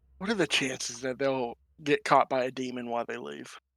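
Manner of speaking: hushed, half-whispered aside. Speaking in character to Rex as the others walk away: half-whispering in character. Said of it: "I'm gonna whisper to Rex".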